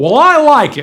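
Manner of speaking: high, loud, big booming blurted words. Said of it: "blurt out in a big, booming voice".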